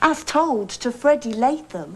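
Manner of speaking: plain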